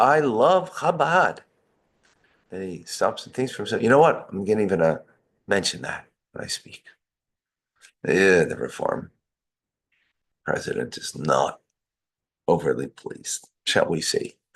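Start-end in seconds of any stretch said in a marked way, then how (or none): 0.0-1.4 mock booming, very loud, pitched-up voice. Retelling a man's declaration in a story: very loud voice. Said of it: "he says now in a very loud voice".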